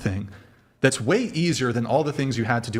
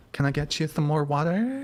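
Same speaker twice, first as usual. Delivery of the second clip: put-on girly voice, higher pitch; 5 semitones higher than usual. Acting out a server taking orders from customers: girl voice. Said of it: "That's just my girl voice".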